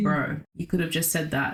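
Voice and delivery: ordinary talk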